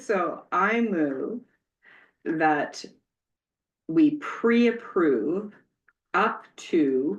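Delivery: very slow, deliberate, spelled-out wording.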